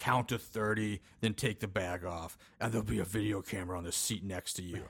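put-on creepy whisper. Retelling a movie scene where a masked captor talks to a captive: imitating a creepy whisper. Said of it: "whispering creepily in her ear".

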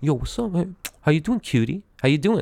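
mock tough, threatening, intimidating, menacing street voice. Retelling how a guy would come up to him: imitating an intimidating tone. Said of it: "in a very intimidating way".

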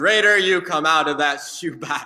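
booming, loud, acted-out proclaiming voice. Retelling a childhood story, speaker voices dad calling the hamster out: loud proclamation. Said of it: "proclaimed in a loud voice".

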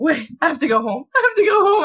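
play-acted high voice breaking, close to tears. Recounting being a little drunk, acting out her past self half-crying. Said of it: "I was like (laughs) half crying".

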